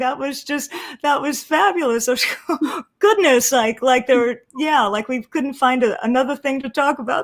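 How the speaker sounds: giggly speech broken by laughter. Reacting to a co-speaker's joke, talking while unable to stop laughing. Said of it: "I just can't stop laughing".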